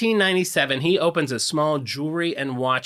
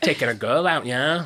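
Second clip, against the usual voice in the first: put-on British accent. Demonstrating the phrase after the other speaker loses the accent: British accent. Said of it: "It's like this".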